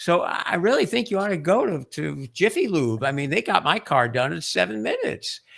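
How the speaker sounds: casual, easygoing friendly voice. Showing how an advertisement should sound, like a friend talking. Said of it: "someone who sounds like a friend".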